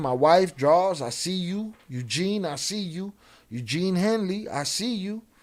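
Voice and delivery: toned-down, slow, drawn-out mild yell. Reading out a quoted account of a man screaming: imitating someone screaming. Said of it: "He's screaming all that".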